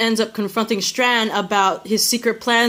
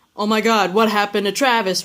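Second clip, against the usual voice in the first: usual speaking voice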